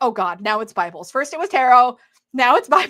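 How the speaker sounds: loud, dismayed, complaining tone. Telling viewers about collecting Bibles, the speaker is imitating Peggy's dismay. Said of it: "to poor Peggy's dismay".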